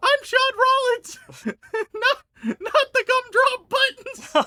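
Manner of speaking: squeaky put-on voice. Mocking a bad impression that has turned into the gingerbread man; squeaky Gingerbread Man voice. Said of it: "It's become the fucking gingerbread man".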